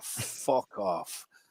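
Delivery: put-on broad Scottish accent, breathy and dismissive. Imitating a manager putting players in their place: imitating Alex Neil's broad Scottish accent. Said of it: "in his broad Scottish accent and just say".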